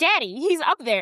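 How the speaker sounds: frantic, desperate pleading outburst, losing control. Retelling a live broadcast where a daughter pleads with her father, acting out a frantic plea. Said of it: "And Cecilia is losing it".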